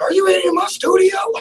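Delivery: high-pitched, loud, angry yell. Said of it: "he's gonna yell at me and be like".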